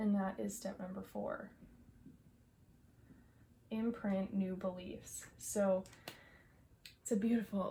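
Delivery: breathless, out of breath. Speaker explaining a step to viewers in a video, out of breath. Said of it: "I'm so out of breath on this video today".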